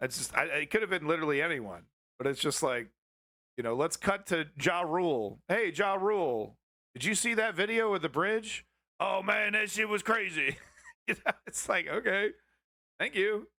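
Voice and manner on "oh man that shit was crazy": grumbly, rumbling, monster-ish voice. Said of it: "he talks like the Cookie Monster".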